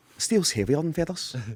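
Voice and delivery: put-on Scottish accent. Acting out a sketch by a scottish comedian: scottish accent. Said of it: "That's a really good accent".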